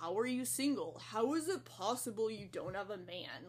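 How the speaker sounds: sarcastic, mocking put-on boy dude voice. Quoting the questions people ask in DMs, in a mocking boy voice. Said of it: "I love your boy voice".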